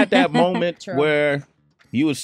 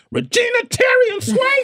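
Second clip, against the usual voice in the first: put-on yelling voice; 3 dB louder than usual. Retelling a mother calling her children in sequence, imitating her yell. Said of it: "My mother used to yell our names".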